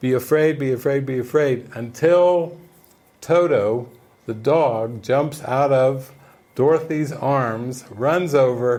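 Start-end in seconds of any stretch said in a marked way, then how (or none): none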